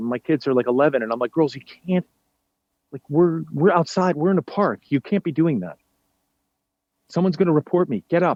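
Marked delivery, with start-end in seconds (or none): none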